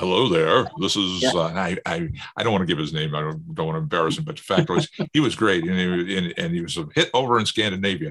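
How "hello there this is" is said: put-on vintage, old-time radio announcer delivery. Imitating a guy being remembered: old time radio voice. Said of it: "this guy had the great old time radio voice".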